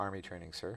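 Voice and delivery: low quiet speech. Retelling answering a superior who asked what the private had been doing, really low and quietly. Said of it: "just really low and quietly".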